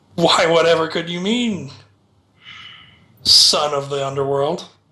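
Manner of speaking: sinister, wicked villain voice chuckling through words. Voicing an evil character answering a threat with a wicked laugh. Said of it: "a wicked laugh".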